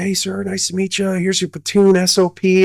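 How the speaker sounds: extremely high voice, pitched way up. Retelling meeting his new platoon sergeant, quoting his greeting in Sergeant Dunn's very high voice. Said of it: "he's got the highest voice".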